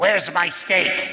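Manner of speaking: rough, gravelly, grumpy voice. Retelling what a friend would say out of nowhere, in a gravelly voice. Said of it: "he'd say in a gravelly voice".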